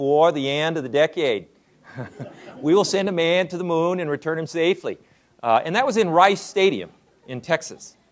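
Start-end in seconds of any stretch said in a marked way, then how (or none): 0.0-5.0 put-on New England accent, orator's delivery. Quoting Kennedy's moon speech to an audience, in a New England accent. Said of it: "I'll do my New England accent".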